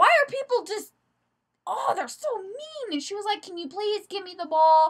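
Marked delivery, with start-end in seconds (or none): 3.4-4.9 earnest, pleading request. Retelling an incident, the speaker quotes the girl whom the man refused; imitating her pleading. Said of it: "She's like pleading with him".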